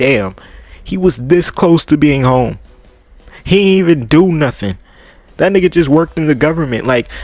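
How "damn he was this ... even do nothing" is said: normal talking voice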